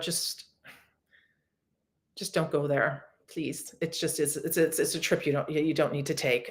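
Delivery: a little emotional, heartfelt and earnest. Speaker addressing listeners, getting a little emotional. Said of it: "I'm getting a little emotional".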